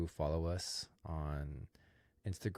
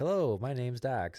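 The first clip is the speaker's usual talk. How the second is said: raised, pitched-up, loud, quirky delivery; 7 semitones higher, 6 dB louder than usual. Imitating a super awkward guy from his TikToks: imitating Dax Flame. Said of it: "this guy's like".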